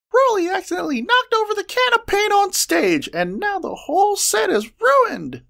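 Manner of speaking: very high, squeaky little voice. Narrator reading a student skidding into the room to tell Penelope, squeaking. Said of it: "she squeaked".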